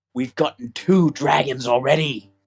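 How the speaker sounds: theatrical stage whisper. A character looks around, then says it to the listeners in a stage whisper. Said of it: "stage whispers at you".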